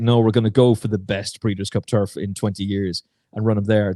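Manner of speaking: plain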